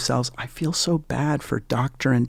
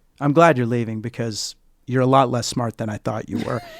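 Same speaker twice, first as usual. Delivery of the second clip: deadpan, bone-dry delivery. Retelling what a company founder said at a farewell party: retelling a dry remark. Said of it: "with very dry tone".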